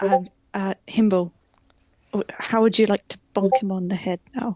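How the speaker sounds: hushed whisper. Pulling the others into a hut and asking something secretly: whispering. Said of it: "I'm gonna whisper to them".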